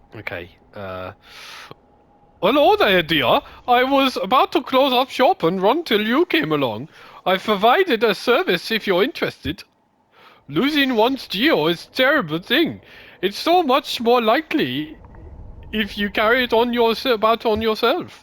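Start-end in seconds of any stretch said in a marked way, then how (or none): 2.5-18.1 shrill, very high, loud put-on German accent. Voicing a game banker character, reading her lines: German accent. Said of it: "your best accent so far".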